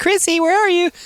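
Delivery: very high, tiny little ghost-woman voice. Recreating the ghost voice he made after poltergeist was mentioned: little woman ghost voice. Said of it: "I did the little woman voice".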